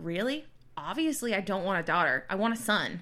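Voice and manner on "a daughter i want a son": ordinary talk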